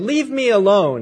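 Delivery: low growling delivery. Retelling a story, a homeless man turning a woman away: retelling a growl. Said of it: "he growled".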